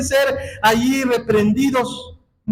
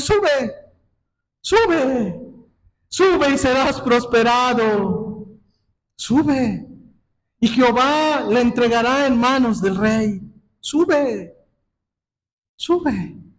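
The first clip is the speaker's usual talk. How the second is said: slow, mock sarcastic tone, sube drawn out. Acting out Micaiah answering the king with a smile: sarcastic Micaiah voice. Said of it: "Micaías aquí lo hizo con sarcasmo".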